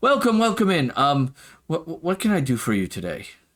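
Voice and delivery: friendly, warm, welcoming tone. Playing a character who smiles and welcomes someone in, smiling welcome. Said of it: "she'll smile and go".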